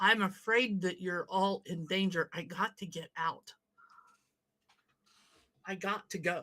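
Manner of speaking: hushed whisper. Acting a scene, whispering to him so that only he can hear. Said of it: "really whisper to him".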